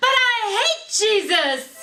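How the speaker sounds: put-on very high, very loud, very slow child's shriek. Retelling a child's outburst during a sacrament meeting: imitating a child screaming. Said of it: "screamed at the top of their lungs".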